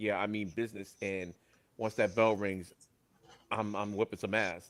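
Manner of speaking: plain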